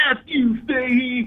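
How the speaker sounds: very high, shrill, screeching yell. Recounting Bill getting up in his face, imitating Bill yelling. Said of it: "he's yelling at me and he's like".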